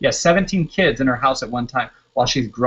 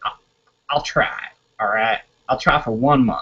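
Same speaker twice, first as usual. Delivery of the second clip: put-on good old boy North Carolina country accent; 2 semitones lower than usual. Retelling what a prospective coach said, imitating Shane's country accent. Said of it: "if I could impersonate Shane's voice".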